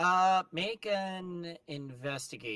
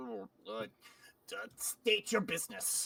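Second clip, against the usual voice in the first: creaky, groggy goblin voice, half-asleep then suddenly alert; 3 semitones higher, 5 dB quieter than usual. Voicing a goblin who wakes from a half-asleep stupor: half-asleep goblin voice. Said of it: "snaps out of almost a half-asleep stupor and looks at you and goes".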